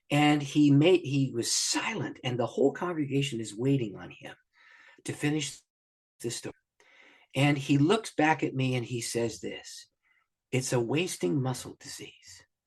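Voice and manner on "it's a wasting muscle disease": imitated, thick Ugandan accent. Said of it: "with his very thick Ugandan accent".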